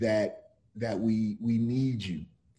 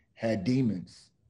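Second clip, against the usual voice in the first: normal talking voice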